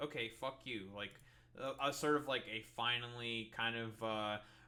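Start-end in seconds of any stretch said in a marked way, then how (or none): 0.0-0.8 mock aggressive retort, quieter. Acting out what the speaker wishes a politician had said: acting out an aggressive retort. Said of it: "aggressive or whatever, just be like".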